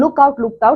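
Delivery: ordinary talk, nothing marked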